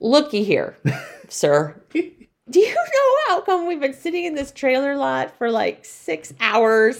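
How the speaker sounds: lively, animated, high, swooping voice. Retelling how a guest stopped traffic in a trailer line: imitating Cassidy. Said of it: "she was like this".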